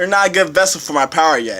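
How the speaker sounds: ordinary delivery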